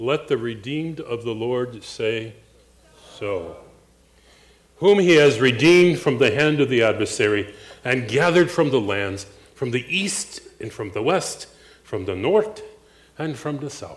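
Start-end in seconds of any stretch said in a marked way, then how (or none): 11.8-14.0 Norwegian-style pronunciation, put-on. Reading a scripture passage aloud, the speaker shows a Norwegian accent. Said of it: "That's how a Norwegian says north".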